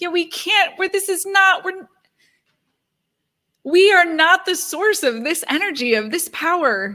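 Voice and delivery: tearful, close to crying. Addressing a group while listening to Yoda, the speaker is tearing up. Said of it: "I'm literally tearing up".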